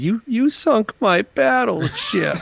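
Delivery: mock-forlorn quiet voice. Imagining what one of the listener's kids said, in a mock-forlorn quiet voice. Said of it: "in a silent, forlorn voice".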